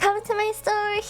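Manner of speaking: nasal shop-clerk voice. Comparing store greetings, imitating a nasal customer-service voice. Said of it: "It's it's really nasal in that way".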